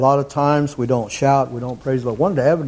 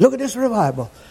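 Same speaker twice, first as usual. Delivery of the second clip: high, excited chatter. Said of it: "she's talking about".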